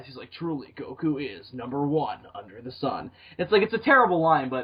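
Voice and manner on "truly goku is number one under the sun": epic, tough cartoon anime announcer narration voice. Quoting the end narration of the show: DBZ narrator voice. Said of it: "it's in the D B Z narrator voice".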